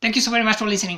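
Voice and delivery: very fast, high, like a recording on fast playback. Podcast host showing what 1.5 speed sounds like, very fast, as if sped up. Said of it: "this is how 1.5 speed looks".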